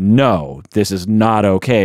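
sternly spoken. Showing how a parent corrects a child's behavior, stern. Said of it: "you're saying sternly".

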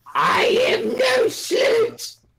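very high, very slow, drawn-out swooping sing-song voice. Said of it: "Did you just do it in my voice?".

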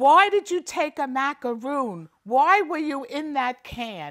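loud yelling. Retelling Mom's words on the way to the hospital: imitating Mom yelling. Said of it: "Mom was yelling".

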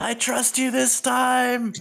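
acted character shouting. Voicing a character who falls while gripping another's shoulder: character yelling. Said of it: "And Pip just yells".

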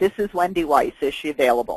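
level, even, flat, matter-of-fact delivery. Asking a secretary whether she is available, in a flat tone. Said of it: "Perhaps you heard the flatness of my tone".

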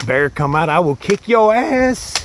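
very high, loud, nervous bravado with cracking voice. Calling out to a possible bear, the speaker's voice cracks a little. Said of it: "Did my voice crack a little bit there?".

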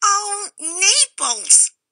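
with a little squeak. Narrator reads the cameo cutter's exclamation, in a squeaky voice. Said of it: "Tito knew this voice by the little squeak that went with it".

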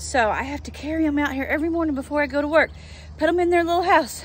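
puffing, breathless, winded talking. Carrying the chickens out to their little house before work; out of breath. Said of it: "I'm out of breath".

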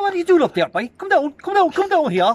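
put-on high, loud, shrill, hollering regional Irish accent. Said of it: "And then you have the other fellas".

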